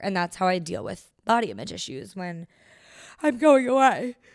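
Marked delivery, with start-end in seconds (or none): 3.2-4.1 words pulled out mid-yawn, raised pitch. Speaker finishing a point to listeners, talking through a yawn. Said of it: "Sorry, I'm yawning".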